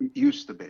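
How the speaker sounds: barely audible, very quiet, high little voice. Recounting a scene about a homeless shelter, retelling a line said very quietly. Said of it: "He says it very quietly".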